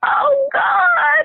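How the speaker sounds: very high-pitched, screamed cry. Recounting what a woman cried out: imitating a woman screaming. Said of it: "as the woman was screaming".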